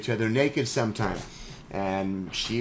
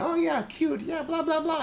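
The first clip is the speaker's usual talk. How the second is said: fake girly voice pitched way up. Voicing a bland reply to a message that was not sent: put-on girl voice. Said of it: "why did I do a girl voice for that?".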